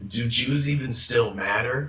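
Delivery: nasty tone, the worst possible awful-sounding tone. Retelling a friend's question to them: imitating a friend's awful tone.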